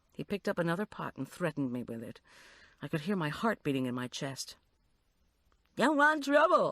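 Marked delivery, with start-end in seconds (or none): 5.8-6.7 shrill, very high, echoing, parroting jeer. Reading a threatening man mocking the narrator's words, in a high mimicking voice. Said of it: "he mimicked in a high voice".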